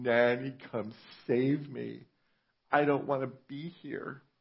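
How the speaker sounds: put-on high, tearful, crying little boy voice. Retelling being left at a relative's house as a child: imitating own childhood crying. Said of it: "I was crying".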